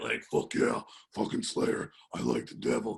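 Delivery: rough, creaky metalhead growl. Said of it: "I sound like the Cookie Monster".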